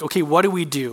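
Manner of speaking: plain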